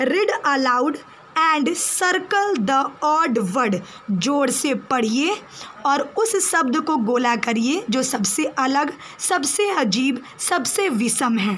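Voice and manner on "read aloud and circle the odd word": very slow, clear, careful reading pace. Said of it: "फिर से मैं एक बार रिपीट कर रही हूँ".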